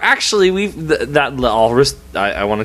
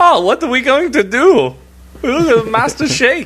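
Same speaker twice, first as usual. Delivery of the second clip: very high-pitched, cartoon-style alien voice; 11 semitones higher than usual. Comparing a film character to Oglethorpe, doing an Oglethorpe voice. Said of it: "He sounds a little bit like, uh, Oglethorpe".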